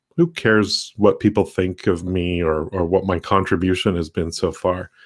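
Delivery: ordinary delivery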